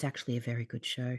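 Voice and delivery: hushed, soft, careful, treading-lightly delivery. Retelling how a sister spoke while treading lightly: imitating a quiet remark. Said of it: "very quietly said".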